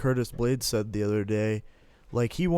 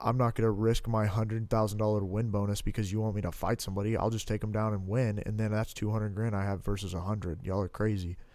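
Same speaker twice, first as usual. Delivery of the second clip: normal talking voice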